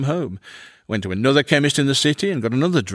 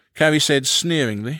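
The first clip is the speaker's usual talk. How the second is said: ordinary delivery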